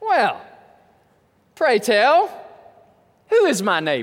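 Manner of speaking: put-on heavy sarcasm, swooping pitch. Retelling an expert lawyer's question to Jesus, with a mock-sarcastic question. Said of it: "you got to hear the sarcasm in this".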